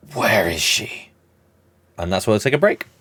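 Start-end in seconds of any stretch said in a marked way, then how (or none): 0.2-1.1 whispered put-on vigilante voice. Voicing an attacker who grabs a character by the throat: whispered Batman voice.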